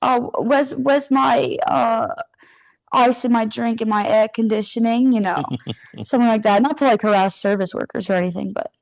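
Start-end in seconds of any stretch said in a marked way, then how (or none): 0.0-5.1 slow, worst possible fake British accent. Demonstrating the accent planned with a friend, worst British accent possible. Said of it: "do our worst British accent possible".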